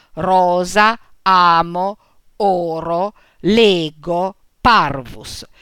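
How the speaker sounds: stress placed on the first syllable. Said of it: "accentate sulla prima".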